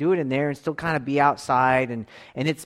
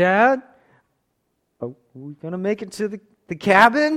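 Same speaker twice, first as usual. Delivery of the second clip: put-on nervous kid voice, higher and louder; 7 semitones higher, 6 dB louder than usual. Retelling heading to the cabin with his sons, imitating nervous Tyler. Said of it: "when Tyler gets nervous, you can hear it in his voice".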